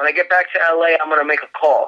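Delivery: normal talking voice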